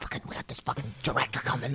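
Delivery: hushed, grumbling mutter, almost a whisper. Retelling frustrated remarks made before a show: imitating muttering.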